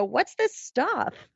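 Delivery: put-on Valley Girl voice and way of talking. Retelling a voice heard while setting up equipment, in a Valley Girl voice. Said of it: "Very Valley Girl sounding".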